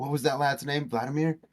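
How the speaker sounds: hushed, half-whispered voice. A role-play character turns back to ask companions a name, half-whispering to the party. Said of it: "I'm gonna whisper that back to my party".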